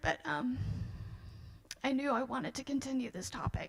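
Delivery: talking through tears. Artist presenting their screen prints, apologizing for crying; crying while speaking. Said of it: "sorry, I keep crying".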